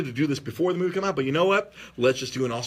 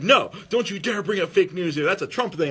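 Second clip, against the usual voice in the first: higher-pitched, put-on angry voice; 4 semitones higher than usual. Retelling how a mother answered when fake news came up: imitating an angry mother. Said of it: "she got so mad at me".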